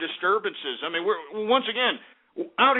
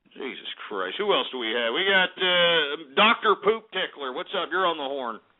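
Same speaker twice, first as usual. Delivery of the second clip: ordinary delivery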